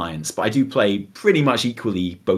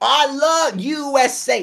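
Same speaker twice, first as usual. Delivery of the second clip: very high, very slow, drawn-out drawl. Doing an impression of the other speaker's voice: imitating Effie's voice. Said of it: "I could do your voice".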